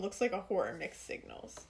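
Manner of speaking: usual speaking voice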